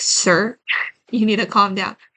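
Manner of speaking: teasing, joking, sarcastic jab-like tone. Acting out someone jokingly calling the listener sir: imitating a sarcastic joking tone. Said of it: "jokingly, like, sarcastically".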